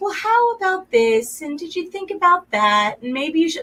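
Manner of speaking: gentle, calm, lovely, slightly high voice. Retelling how Dee answers when called for help, imitating Dee's calm voice. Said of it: "she's got that calm, lovely voice".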